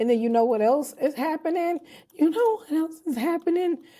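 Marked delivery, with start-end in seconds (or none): 2.1-3.8 very high voice cracking with excitement. Sharing upcoming news the speaker is super excited about, voice cracking. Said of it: "my voice is cracking".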